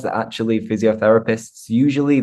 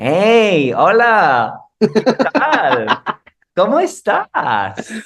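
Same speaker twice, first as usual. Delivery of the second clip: exaggerated Mexican accent, very high, slow, swooping; 10 semitones higher, 4 dB louder than usual. Showing the accent once impersonated for fun, exaggerated mexican accent. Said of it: "impersonate the Mexican accent".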